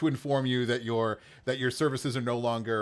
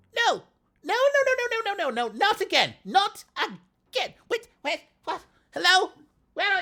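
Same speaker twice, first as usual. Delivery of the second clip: very high, swooping, squeaky little gnome voice; 5 dB louder than usual. Telling a scene where a gnome's voice comes from the other side, in a squeaky gnome voice. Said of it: "a squeaky voice over on the other side".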